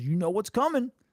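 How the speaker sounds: mocking, spoken through laughter. Retelling how an old pitcher taunted a batter, imitating someone laughing while talking. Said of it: "he just started laughing".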